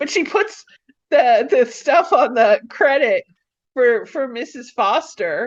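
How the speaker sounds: overflowing excitement. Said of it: "I'm getting very excited".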